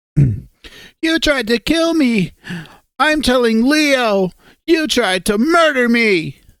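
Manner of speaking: upset, accusing tone, on the verge of crying. Voicing Sydney accusing a player after being held underwater: Sydney voice. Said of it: "I guess I should do Sydney".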